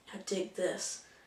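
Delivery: hushed, soft, breathy whisper, barely voiced. Describing a movie scene where a character dances on a date, retelling a softly said line. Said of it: "you hear him like real softly say like".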